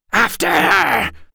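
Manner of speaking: high, shrieking, screeching creature voice. Narrator reads a creature ordering a chase after a fleeing woman: screeching. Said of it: "the Daraka screeched".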